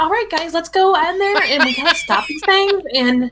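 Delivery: very high put-on voice. Showing the voice put on while playing, a higher-pitched voice. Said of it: "I actually do put it on like a higher pitched voice".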